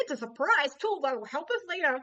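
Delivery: quick, loud squeaky delivery. Reading tarot cards, the speaker delivers a line in a Mickey Mouse voice. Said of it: "Mickey Mouse voice".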